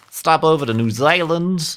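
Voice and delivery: put-on bad New Zealand accent. Planning a trip around PAX Australia, the speaker tries a bad New Zealand accent. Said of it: "That is not a, a New Zealand accent at all".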